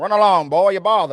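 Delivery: very loud, booming cartoon character voice. Retelling a film scene where Pennywise talks like Foghorn Leghorn: Foghorn Leghorn voice. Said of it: "like Foghorn Leghorn".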